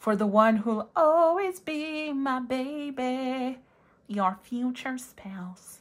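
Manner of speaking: put-on nerdy character voice with the word "baby" stretched out. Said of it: "That was the voice".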